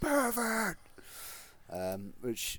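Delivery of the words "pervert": acted-out, very high, loud, piercing shriek. Retelling an episode scene: imitating Helen Lovejoy screaming. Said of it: "who screams".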